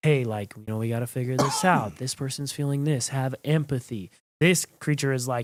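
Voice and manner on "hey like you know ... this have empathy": put-on character whisper. Comparing how two creatures in a story whisper: Green Martian whisper. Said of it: "would whisper like".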